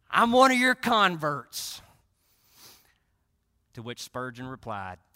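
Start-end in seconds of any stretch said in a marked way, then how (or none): 0.1-1.8 put-on drunken voice, louder. Retelling what a drunk man said, imitating a drunken voice. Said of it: "in his drunken voice and stupor".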